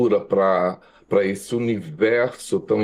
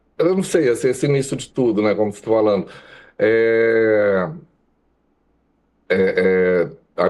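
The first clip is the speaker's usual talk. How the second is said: moved, slightly nervous, halting, with drawn-out "é". Recalling how the municipal school started it all, a little emotional. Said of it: "me emocionei um pouco assim".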